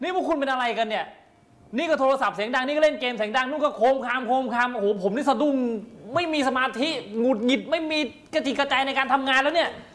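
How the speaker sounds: agitated, worked-up, very high-pitched ranting. Character in a sketch complaining until the others urge calm, worked-up agitation. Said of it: "ใจเย็นดิพี่ใจเย็นก่อนใจเย็นก่อน".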